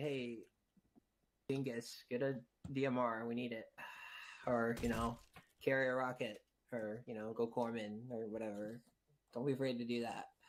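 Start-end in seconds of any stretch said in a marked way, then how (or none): none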